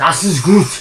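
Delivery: very loud, shrill, aggressive scream. Showing that screaming makes German sound aggressive: screamed aggressively. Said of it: "if you scream the word, like if I go".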